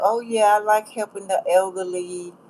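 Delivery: mocking, sarcastic delivery. Retelling what a woman said when the speaker needed laundry quarters, mock-sarcastic tone. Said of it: "she was trying to be sarcastic".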